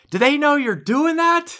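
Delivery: put-on, loud, high-pitched shouting. Retelling her neighbor calling from across the street, imitating neighbor shouting. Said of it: "quit shouting".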